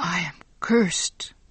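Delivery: hushed, quiet whisper. A man who just killed a spider with his breath whispers to himself. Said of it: "Giovanni whispered to himself".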